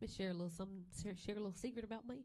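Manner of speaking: native Arkansas accent slipping out. Telling the others a secret about themself: Arkansas accent slipping out. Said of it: "ooh, that accent came out".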